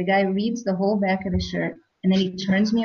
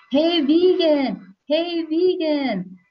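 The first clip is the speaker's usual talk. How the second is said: mock very slow, high, drawn-out shout; 9 semitones higher than usual. Retelling a stranger calling across a crowded airport security line, imitating someone shouting. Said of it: "I hear somebody shouting".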